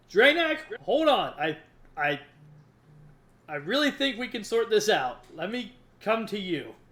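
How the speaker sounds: high, very loud yell in put-on voice. Playing a character with hands up, calling to Draenak: yelling in character. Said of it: "I'm gonna yell".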